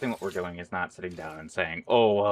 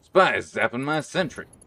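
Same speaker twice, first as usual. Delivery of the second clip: bad rough game-character voice, pitched a bit higher; 5 semitones higher, 4 dB louder than usual. Reacting to a spy zapping a sentry: bad Engineer impression. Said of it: "that was probably a bad impression".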